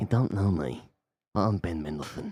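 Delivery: put-on badly drunk-sounding voice. Staying in the Ben Mendelsohn voice after praise of it. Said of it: "your Ben Mendelsohn is so good".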